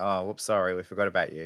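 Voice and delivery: normal talking voice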